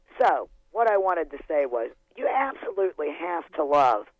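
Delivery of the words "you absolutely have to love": ironic, tongue-in-cheek, sarcastic tone. Calling in on the phone line with a comment: sarcastic. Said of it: "I'm being sarcastic here".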